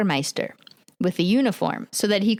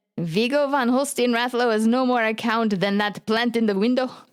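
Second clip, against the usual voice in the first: put-on Norwegian accent in English; 4 semitones higher than usual. Quoting what a man said, to the other speaker: Norwegian accent. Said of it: "At the accent".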